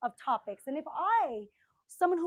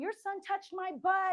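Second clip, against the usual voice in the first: mock woman's yell, much higher and slower; 5 semitones higher than usual. Retelling a woman at a bodega shouting at a boy's mom, imitating a woman yelling. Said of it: "She's like yelling at the mom".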